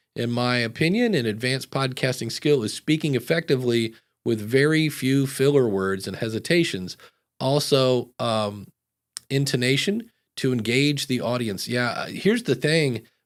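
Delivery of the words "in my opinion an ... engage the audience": ordinary delivery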